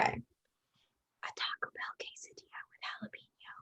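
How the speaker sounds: whispering. Passing a heard sentence on to the next player in telephone: whispering. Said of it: "I'm gonna whisper it to Hannah".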